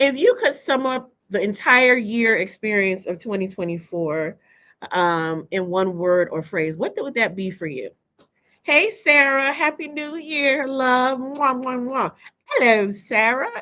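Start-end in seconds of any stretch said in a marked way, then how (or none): 12.4-13.6 put-on British accent. Speaker greeting Sarah in a new year shout-out, British accent. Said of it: "in my British accent".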